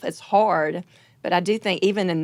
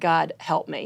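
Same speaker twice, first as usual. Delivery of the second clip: put-on tearful, crying voice. Retelling praying on the floor: imitating own past crying. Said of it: "just crying".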